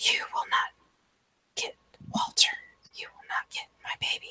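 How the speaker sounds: very quiet, barely audible whisper. Instead of screaming at the top of her lungs, she whispers. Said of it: "she whispers".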